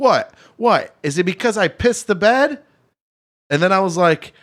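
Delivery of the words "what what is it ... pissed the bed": mock yelling, acted shout. Retelling what a woman said to her at the bar, retelling someone yelling. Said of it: "she's yelling at me at the bar".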